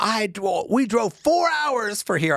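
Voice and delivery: very high, howling, furious angry yell. Telling of an upset woman at a theater, the speaker imitates her yelling. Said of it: "She was yelling at the guy".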